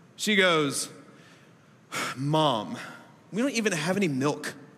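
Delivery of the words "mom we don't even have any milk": bratty, entitled, spoiled tone. Retelling a daughter's complaint about having no milk: imitating an entitled tone. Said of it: "you little entitled girl".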